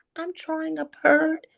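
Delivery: small, timid, high little voice. Speaker retells answering a woman who asked what they were doing: retelling in a timid voice. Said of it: "in my timid voice".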